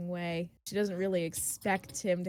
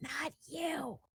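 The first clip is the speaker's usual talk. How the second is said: soft, high, muttered under the breath; 7 semitones higher, 7 dB quieter than usual. Voicing a character who leans in close to someone: under her breath. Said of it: "under her breath".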